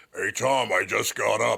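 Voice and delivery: slow, drawn-out smoker's voice. Speaker acts out his mother greeting him, imitating her smoker's voice. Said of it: "she had the Siggy voice".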